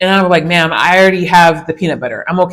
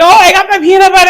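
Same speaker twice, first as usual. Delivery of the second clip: happy tone, higher and louder; 13 semitones higher, 6 dB louder than usual. Retelling what a visitor said when showing her peanut butter: imitating someone speaking happily. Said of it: "she's just happily like".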